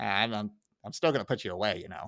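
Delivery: stuttering, all force gone. Retelling a scene after a Manhattan: Chief Wiggum voice. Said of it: "so Wiggum kinda, like, he, he kinda loses his edge".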